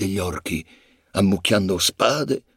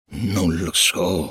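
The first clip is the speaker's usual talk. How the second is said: weary, tired voice; 3 semitones lower than usual. Narrator reads Aragorn answering Gimli's question about the hobbits, weary. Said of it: "rispose stancamente Aragorn".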